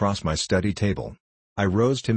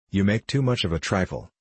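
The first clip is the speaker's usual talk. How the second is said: ordinary delivery, nothing marked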